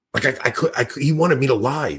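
ordinary talk

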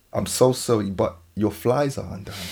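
very low, hushed, apologetic half-whisper. Recounting leaning toward a woman's ear to tell her something: retelling own half-whisper. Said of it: "I've whispered".

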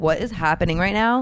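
normal talking voice

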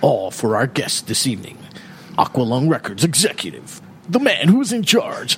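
AM radio presenter announcer delivery. Host introducing the evening's guest on the show, in an AM radio voice. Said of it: "There's my AM radio voice coming back".

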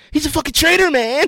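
pleading voice, pitched way up.

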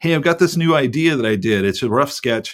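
ordinary talk, nothing marked

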